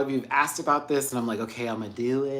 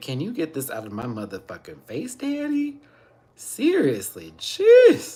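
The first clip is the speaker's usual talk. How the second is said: sing-song, swooping, animated cat voice; 4 dB louder than usual. Greeting the other cat, then speaking for it: voicing the cat Mina. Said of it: "She's like".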